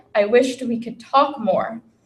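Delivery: ordinary talk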